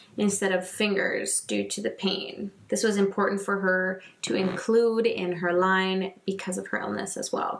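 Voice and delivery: ordinary talk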